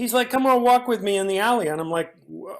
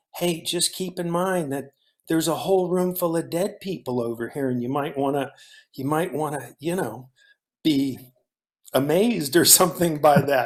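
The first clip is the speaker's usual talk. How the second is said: whispered voice; 5 semitones lower than usual. Retelling advice whispered from behind the camera: imitating someone whispering. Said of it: "you just kind of whispered to me".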